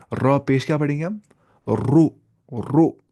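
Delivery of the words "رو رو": heavy, thick, full-mouthed sound on "ra". Showing learners how to read ra with a dammah: heavy thick sound. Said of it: "موٹی آواز سے".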